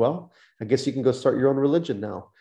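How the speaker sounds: plain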